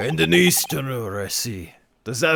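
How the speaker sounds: slipping into a put-on Russian accent. Reading a scene aloud and voicing the governor, in a Russian accent. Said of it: "I fucking went the Russian".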